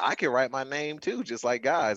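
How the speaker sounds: ordinary talk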